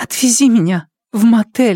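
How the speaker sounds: quavering, trembling, very high voice. Narrator reads Liao Yafang turning to him after a pause: trembling voice. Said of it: "сказала дрожащим голосом".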